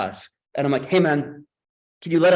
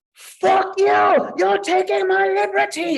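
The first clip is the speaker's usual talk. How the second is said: mock shrill, very high, slowed-down, drawn-out scream; 3 dB louder than usual. Retelling an airport stop where another stopped man screamed at agents, imitating a man screaming. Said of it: "And he screams at them".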